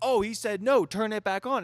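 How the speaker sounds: put-on very high, loud, frantic panicked blurt. Retelling his own reaction after shutting off his truck, retelling own panic. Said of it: "And in a panic".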